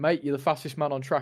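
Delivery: ordinary delivery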